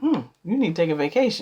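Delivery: facetious, unsympathetic, dismissive sarcastic quip. Showing how someone without empathy answers a tired person: sarcastic. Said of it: "It's really kind of being sarcastic or facetious".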